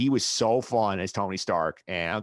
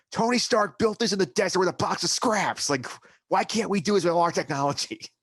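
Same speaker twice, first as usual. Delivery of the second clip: play-acted enraged yelling, pitched way up; 9 semitones higher than usual. Retelling a movie scene where a character screams at an employee: imitating Obadiah Stane screaming. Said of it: "he's screaming at the guy in his office".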